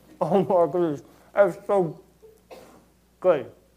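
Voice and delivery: speaking with mouth full of food. Illustrating a point by taking a bite of donut, the speaker talks with mouth full. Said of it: "how hard it is to talk with a donut in your mouth".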